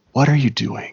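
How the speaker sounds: whispering. Voicing a figure who grabs a player from behind: whispering in someone's ear. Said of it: "you hear a whisper in your ear saying".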